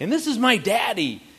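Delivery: high, loud yelled-out call. Recounting how she yelled out introducing her daddy, retelling her loud yell. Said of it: "she yells out".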